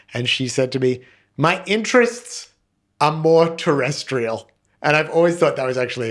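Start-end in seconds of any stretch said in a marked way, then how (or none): 1.3-4.5 put-on pitched-up New York accent. Quoting what Claire said while breaking up: New York accent imitating Claire. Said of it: "and a great accent".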